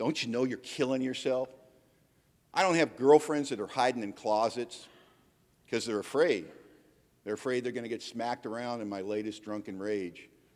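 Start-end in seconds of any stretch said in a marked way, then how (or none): 0.0-1.5 mock crying, pleading motherly voice. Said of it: "my mom standing in front of me crying".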